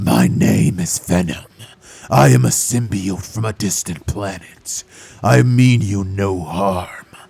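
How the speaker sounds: very deep, very slow, drawn-out monster voice. Speaker warns viewers it may be cringy, then does the Venom voice. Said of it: "I'm gonna do the freaking voice".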